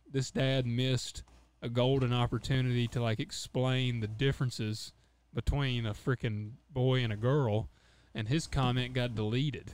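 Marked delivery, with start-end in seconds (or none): none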